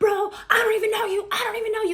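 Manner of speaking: frantic, high, fast, raw screaming. Telling the story of a phone call, retelling Future screaming at her. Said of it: "he is screaming at her like".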